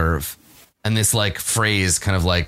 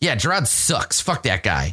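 disgruntled, angry grumbling complaint; 4 semitones higher than usual. Narrating a scene, voicing the background reaction to a speech: angry muttering. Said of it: "there's like more angry, like muttering".

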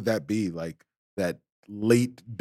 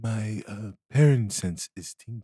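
private confiding tone. Playing a character climbing a ladder, telling a companion: speaking very quietly. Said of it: "say very quietly".

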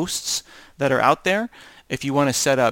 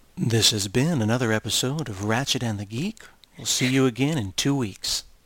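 put-on radio announcer voice, on-air host style; 3 semitones lower, 3 dB quieter than usual. Signing off an episode of the show in a radio announcer voice. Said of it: "I think it's time for my radio voice".

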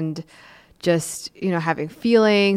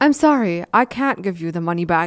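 put-on weird, stilted, wooden, insincere tone. Mocking how Gabriel says his fake apology: imitating Gabriel's stilted fake apology. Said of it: "in his weird stilted act".

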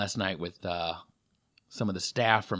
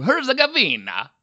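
put-on high, loud, belted Italian-accented shout. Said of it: "I don't know why I would say a Bosnian word with a Italian accent".

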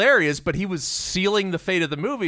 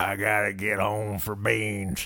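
very low, gravelly, unhinged psycho voice; 8 semitones lower, 5 dB quieter than usual. Quoting a movie character's line, the speaker does a gravelly psycho voice. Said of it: "He said it in a gravelly psycho voice".

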